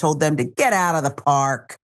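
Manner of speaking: harsh, abusive, hostile edge. Reading a report of troops ordering people out, in a mock-hostile tone. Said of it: "I added that inflection because I, I, it was abusive, I think, okay? It was hostile, meant to be".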